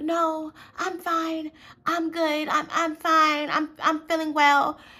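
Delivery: fake, very high, slow, trying-to-be-nice voice. Describing how a woman talks when she's being fake, imitating her fake-nice high voice. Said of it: "She goes from talking like in her normal tone to like this very high pitched voice".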